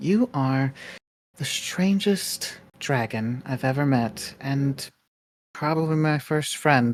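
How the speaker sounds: soft, hushed stage whisper. Speaking in character to a sleeping dragon: half-whispering. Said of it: "whispers out".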